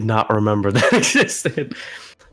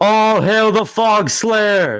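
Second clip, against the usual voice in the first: yelling, much higher, louder, slower; 12 semitones higher, 5 dB louder than usual. Narrating a game scene, a character looks over the edge and calls out, yelling. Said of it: "looks over the edge and yells".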